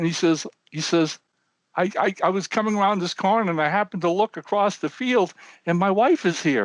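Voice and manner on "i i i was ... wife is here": high, sobbing, crying through every word. Telling a joke, voicing an old man on a bench: imitating sobbing. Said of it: "And he's sobbing, sobbing".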